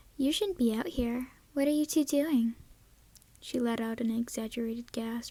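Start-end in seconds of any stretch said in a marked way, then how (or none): 0.2-2.5 lilting singsong tone, higher. Reading a story aloud, voicing a character: sing-song voice. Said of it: "Summer said in a sing-song voice".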